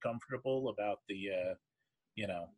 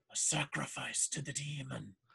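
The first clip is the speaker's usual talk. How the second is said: frightened, fearful, hushed half-whisper; 2 semitones higher, 5 dB quieter than usual. A man looks around to be sure nobody listens and leans in, fearful half-whisper. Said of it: "sort of fearfully whispers".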